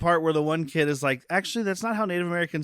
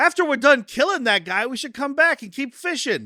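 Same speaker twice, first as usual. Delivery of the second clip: yelling, higher and louder; 8 semitones higher, 4 dB louder than usual. Retelling movie characters shouting their plans aloud: imitating someone yelling. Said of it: "they're just yelling exposition".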